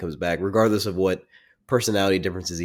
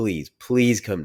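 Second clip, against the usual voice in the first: mock earnest, pleading, begging voice; 2 semitones higher than usual. Retelling a movie scene where a character begs another: imitating a character begging. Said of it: "He's begging him".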